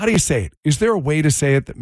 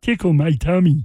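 acted frog puppet impression. Friends trying out voices, one offers to do Kermit: Kermit the Frog voice. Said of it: "I can do Kermit".

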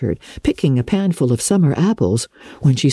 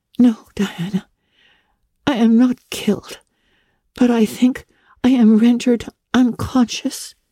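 hesitant, dazed, uncertain voice, pitched up; 8 semitones higher than usual. Sitting up dizzily, a girl answers a friend, answering uncertainly. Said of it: "answered uncertainly".

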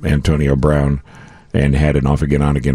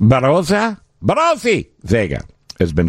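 put-on foreign accent, rolled R, much higher; 10 semitones higher than usual. A talk show host showing how to say an unfamiliar name, put-on accent with rolled r. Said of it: "do it with an accent".

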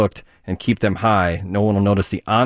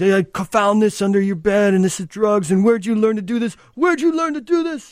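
very high yell, escalating and climbing in pitch; 13 semitones higher than usual. Retelling an 80s marijuana PSA, imitating the dad yelling at his son. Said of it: "his dad's yelling at him".

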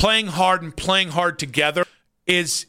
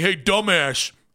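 put-on New York accent. Commentator quoting a viewer's tweet at him, in a new york accent. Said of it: "That was an accent right there. I think that was New York".

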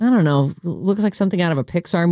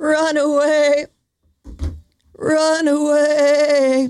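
high, bleating, goat-like drawl; 10 semitones higher than usual. On the station's tagline, a host does Posty's goat noise. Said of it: "I'm doing the goat noise that Posty does".

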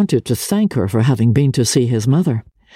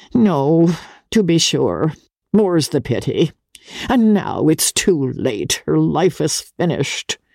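put-on coldly complacent, aged-sounding, higher pitch; 3 semitones higher than usual. Narrator reads an old lady's reply to a young man, with cold-blooded complacency. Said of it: "She spoke with the cold-blooded complacency of the aged".

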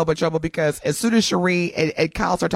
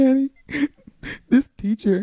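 put-on, overly dramatic pleading, higher pitch; 8 semitones higher than usual. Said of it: "you gotta amp up the dramatics".

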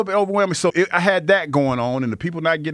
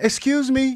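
put-on, pitched-up, overly polite, nicest voice; 8 semitones higher than usual. Retelling speaking to shoppers hovering in a Costco lane, put-on nicest polite voice.

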